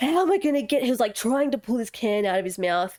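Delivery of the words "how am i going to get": put-on panicked voice, higher. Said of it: "proceeds to lose his fucking shit".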